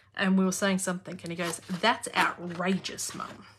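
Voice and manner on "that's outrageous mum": cheeky, sassy put-on voice full of attitude. Retelling what Hunter says to Mum: sassy Hunter impression. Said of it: "such a sassy personality when he says it".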